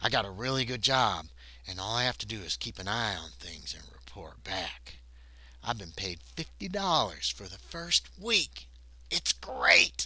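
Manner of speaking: low, quiet, hushed, confiding voice. Retelling a man speaking to a bartender, retelling a lowered, hushed voice. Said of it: "he lowers his voice and he goes".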